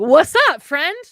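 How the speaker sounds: loud, high, cheery voice.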